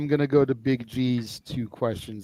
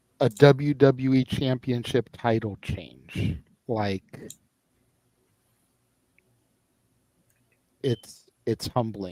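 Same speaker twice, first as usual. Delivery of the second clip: emotion held back, kept in check. After calling the count on a WWE title change, holding back emotion. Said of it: "I'm speaking in this tone because I'm trying not to get wrapped up emotionally".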